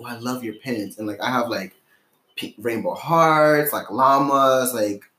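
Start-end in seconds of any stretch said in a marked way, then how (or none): 0.0-1.0 soft, hushed, close half-whisper. Retelling what a girl half-whispered about the pins: imitating a half-whisper. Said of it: "whispers to me".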